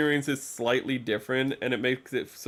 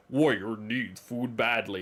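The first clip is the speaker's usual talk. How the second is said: deep, slow game announcer voice. Describing a video game, the speaker quotes its announcer in a deep game announcer voice. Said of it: "this dude with a deep voice said it".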